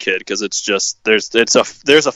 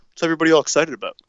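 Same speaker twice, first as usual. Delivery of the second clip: put-on nonchalant, casual voice, pitched higher; 7 semitones higher than usual. Retelling how a goalie reacted after a win: imitating nonchalant Jordan Binnington. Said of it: "nonchalantly skated down the ice".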